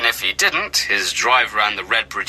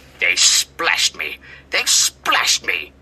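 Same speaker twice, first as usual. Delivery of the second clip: low, cross, seething hiss; 4 semitones lower than usual. A narrator voices Old Stuck-Up after workmen splashed him; hissing. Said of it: "he hissed".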